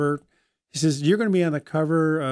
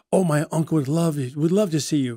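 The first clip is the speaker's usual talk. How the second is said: put-on deep British accent. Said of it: "she has this deep British accent".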